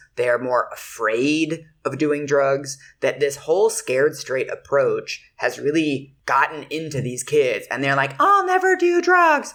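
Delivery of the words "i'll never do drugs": put-on very high, loud, pure falsetto kid voice. Describing kids scared off drugs, the speaker quotes them in a falsetto kid voice. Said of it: "Just pure falsetto".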